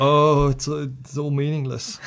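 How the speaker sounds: despairing, weepy, crying moan. Play the soldiers who stay behind, crying with their heads in their hands, moaning.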